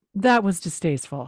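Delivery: put-on matter-of-fact tone. Retelling how she said it, looking over at Booth, mock matter-of-fact. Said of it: "Very matter of fact".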